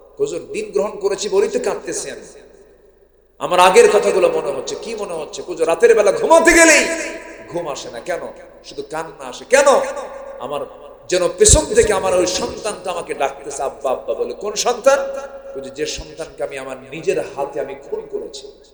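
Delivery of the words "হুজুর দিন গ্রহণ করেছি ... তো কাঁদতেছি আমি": plain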